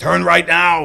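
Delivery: high, mock navigation-voice yell. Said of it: "I'd like to hear Arnold yelling at me".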